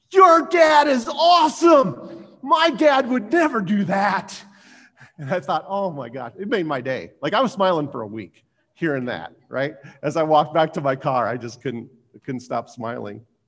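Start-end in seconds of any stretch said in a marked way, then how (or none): 0.1-4.4 shrill, very high, very loud, drawn-out shout. Retelling what a girl in her circle shouted as he walked away, imitating a shout. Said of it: "this girl sitting in her circle shouts".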